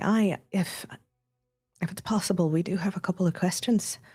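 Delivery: very calm, quiet, soft-spoken voice. Playing Winnie, speaking to those offering a blessing, very calm and quiet. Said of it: "very calmly and very quietly".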